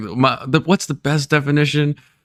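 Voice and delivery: stop-start, halting, pause-filled search for words. Imitating a speaker giving a definition: imitating someone pausing.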